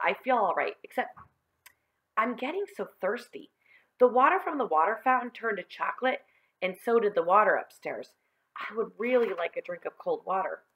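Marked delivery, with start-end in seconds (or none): none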